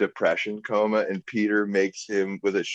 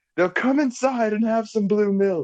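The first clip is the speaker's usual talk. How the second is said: put-on yelling old woman voice, higher pitch; 13 semitones higher than usual. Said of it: "when she's yelling".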